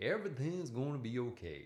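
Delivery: put-on Alabama accent with sing-song, swooping lilt. Retelling what a rehab manager said: imitating an Alabama accent. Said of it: "That's an Alabama accent".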